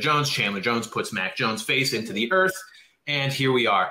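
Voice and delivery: normal talking voice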